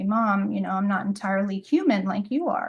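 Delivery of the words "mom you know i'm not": plain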